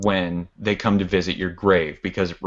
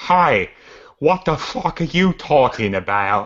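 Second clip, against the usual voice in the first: terrible, high, fake Boston accent; 7 semitones higher, 4 dB louder than usual. Showing how a woman in a film sounded, in a bad boston accent. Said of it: "It was basically like that".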